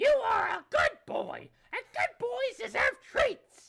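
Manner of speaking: put-on old-lady voice placed in head register. Playing Nana praising John, Nana head voice. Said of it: "you gotta go into the head voice for that one".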